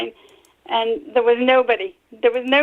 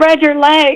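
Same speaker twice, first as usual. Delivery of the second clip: loud, barking scream; 4 semitones higher, 8 dB louder than usual. Retelling what the officer screamed during a search: imitating an officer screaming. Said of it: "he screamed at me".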